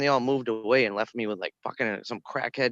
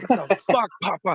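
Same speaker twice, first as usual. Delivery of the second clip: put-on yelling, higher and louder; 8 semitones higher, 5 dB louder than usual. Reenacting how they always yell at their dog: reenacting own yelling. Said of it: "I'm always yelling".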